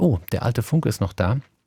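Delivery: ordinary delivery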